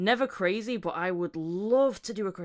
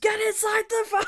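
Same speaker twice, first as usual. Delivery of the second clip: play-acted very high, loud scream; 4 dB louder than usual. Retelling how a man parks his van and runs out: retelling a scream. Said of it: "and screams".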